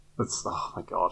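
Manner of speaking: normal talking voice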